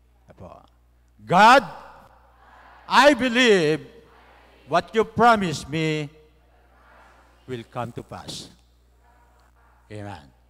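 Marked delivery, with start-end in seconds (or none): 1.3-8.5 said loudly, higher and louder. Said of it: "In a loud voice".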